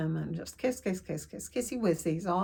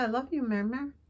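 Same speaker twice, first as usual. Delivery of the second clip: put-on tiny, small, childlike voice; 4 semitones higher than usual. Recalling what he said before going into hospital, in Connor's little voice. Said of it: "in his little Connor voice".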